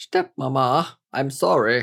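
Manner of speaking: swooping, lilting, animated put-on British accent. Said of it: "She doesn't sound British. Why are you?".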